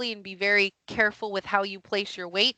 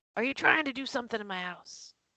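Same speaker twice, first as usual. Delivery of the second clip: put-on Texan accent, softly; 3 semitones higher, 6 dB quieter than usual. Voicing a character questioning people about his house, Texan accent. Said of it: "am I giving him a Texan accent?".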